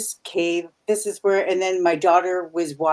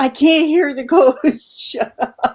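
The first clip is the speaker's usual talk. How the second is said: raised, high-pitched yell; 8 semitones higher, 7 dB louder than usual. Retelling yelling at the screen during a show: retelling own yell at screen. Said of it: "I yelled at the screen".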